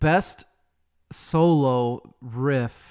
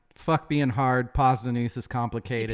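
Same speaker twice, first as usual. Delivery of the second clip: ordinary talk, nothing marked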